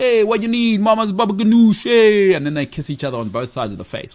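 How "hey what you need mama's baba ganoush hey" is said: loud, pitched-up fake caricature New York Italian accent. Speaker imitating how New Yorkers talk, in a mock New York Italian accent. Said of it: "They say that as well".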